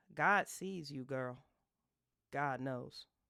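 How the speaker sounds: mock disgust and disappointment. Speaker acts out what a woman will say to you, mock disgust and disappointment. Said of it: "grimace filled with disgust and disappointment".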